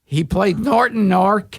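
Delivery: plain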